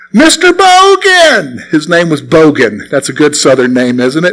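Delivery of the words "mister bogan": very high-pitched, hollered voice. Retelling calling out to a church deacon across the street: retelling a holler. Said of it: "I hollered".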